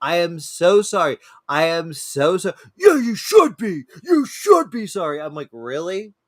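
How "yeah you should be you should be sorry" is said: put-on high, scolding holler. Retelling what a man said after the speaker apologized, imitating someone yelling. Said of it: "so just yelling like it was like".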